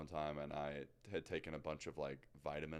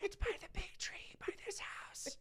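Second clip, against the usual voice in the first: imitated whisper, higher. Retelling a phone call where the caller hides behind a bush: imitating someone whispering. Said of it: "Why are you whispering?".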